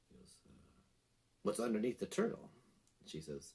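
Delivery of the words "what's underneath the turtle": prim, proper, very British voice. Retelling an anecdote, quoting a famous atheist's reply: prim proper British Bertrand Russell voice. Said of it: "this very, uh, prim, proper British sense".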